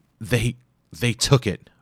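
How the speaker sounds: strained words squeezed out with effort. A narrator reads a character's reply in a story, grimacing, words eked out. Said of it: "grimaced as the words eked out of his mouth".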